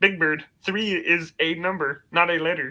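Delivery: put-on high children's-show frog puppet voice. Acting out a puppet parody, replying to Big Bird in a Kermit the Frog voice. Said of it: "I learned to do Kermit the Frog copying that".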